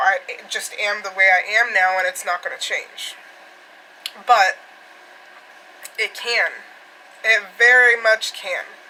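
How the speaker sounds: slow, teary voice welling up with tears. Speaker sharing a personal story, a little teary-eyed. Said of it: "Sorry, I get a little teary-eyed".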